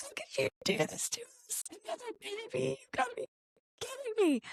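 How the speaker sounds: very high, very soft, swooping, sobbing speech. Recalling being told of a new sibling, retelling hysterical sobbing. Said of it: "We were sobbing, crying, hysterical".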